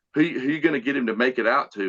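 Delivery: ordinary talk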